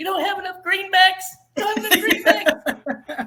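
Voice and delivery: very high, squeaky, loud little voice. Describing how Oscar voices Mitchell, imitating Oscar's high squeaky voice. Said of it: "he just has this high squeaky pitched voice".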